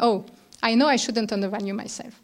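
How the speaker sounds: ordinary talk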